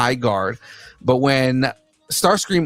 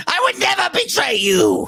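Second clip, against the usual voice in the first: very high, slow, swooping, whiny put-on character voice. Trying a Starscream impression for the first time, line to Megatron: Starscream voice. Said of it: "that is the first time I have ever tried a Starscream".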